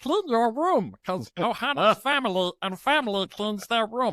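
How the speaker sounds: high cartoon alien voice. A parent telling their daughter to clean her room, Stitch voice. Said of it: "I'm Stitch to my daughter".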